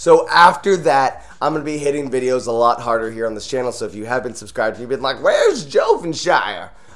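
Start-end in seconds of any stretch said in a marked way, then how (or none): 5.2-6.7 put-on old-timer gold miner voice. Youtuber voicing viewers who wonder where he's been, in an old gold miner voice. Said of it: "why you sound like an old gold miner".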